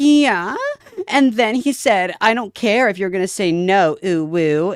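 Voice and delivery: squeaky, very high, slow, cutesy uwu voice. Imitating a VTuber's way of talking online: one HP uwu voice. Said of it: "in the one H P uwu voice".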